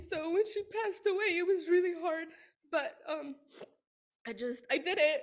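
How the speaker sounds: speaking while crying, tearful voice. Thanking a late professor who pushed them not to give up, crying while speaking. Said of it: "I'm here and I'm crying".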